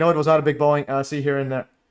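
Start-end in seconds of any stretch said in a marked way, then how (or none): none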